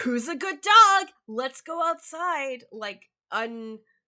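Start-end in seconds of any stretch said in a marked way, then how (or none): 0.0-2.6 very loud, high, weirdly fake-cheerful voice. Voicing a handsome young man talking to a dog: weirdly fake cheerful. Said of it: "but fake cheerful".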